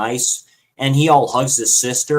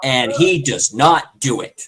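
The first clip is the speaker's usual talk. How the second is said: plain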